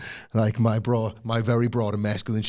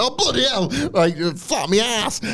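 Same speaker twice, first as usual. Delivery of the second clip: acted, pitched-up, rattled, flustered grumbling with curses; 12 semitones higher, 4 dB louder than usual. Acting out a wrestler stumbling over the guardrail: imitating a rattled, flustered grumble. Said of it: "this whole thing has rattled him so much".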